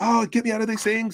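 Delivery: put-on frantic, panicking, very high voice. Retelling a call where a trapped woman begged for help: imitating a panicking woman. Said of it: "she's, like, panicking".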